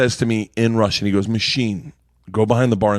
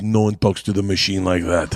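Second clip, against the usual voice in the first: put-on Russian man's voice, lower; 3 semitones lower than usual. Retelling what Big Igor said after spitting vodka: imitating Big Igor. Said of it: "and goes".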